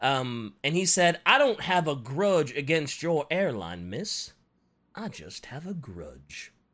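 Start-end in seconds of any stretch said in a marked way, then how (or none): 1.3-6.5 slow southern drawl. Retelling Cooper's reply to an airline worker, in a D. B. Cooper southern drawl. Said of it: "And he talked in a southern drawl".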